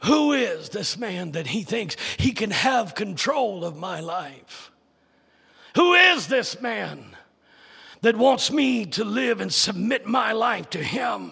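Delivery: put-on scornful, contemptuous, disgusted tone. Preacher voicing those who question Christ, mock disdain and disgust. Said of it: "ask with an attitude of disdain and disgust".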